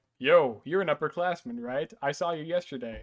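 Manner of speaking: normal talking voice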